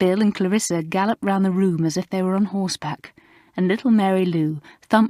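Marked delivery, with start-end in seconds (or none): none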